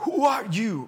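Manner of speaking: ugly, nasty-sounding, loud, high tone. Retelling a woman's reply to the pastor: imitating a nasty ugly tone. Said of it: "Pero así bien feo".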